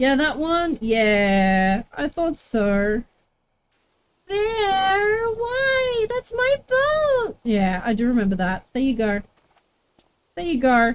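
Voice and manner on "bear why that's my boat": put-on very high, slow, whiny child voice. Try out the voice and check it is the right one, in a put-on whiny, thwarted-child voice. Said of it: "almost like a child not getting what it wants".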